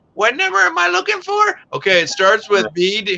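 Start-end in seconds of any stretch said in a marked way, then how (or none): 0.2-1.6 put-on very high, elderly little old lady voice. Recalling phone calls asking a customer for a number: imitating a 90-year-old lady. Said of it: "talking to like a 90-year-old lady".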